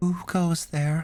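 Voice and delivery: distinctly feminine voice, pitched high. An unseen voice answers someone calling out in a room, in a distinctly feminine voice. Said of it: "a distinctly feminine voice reply".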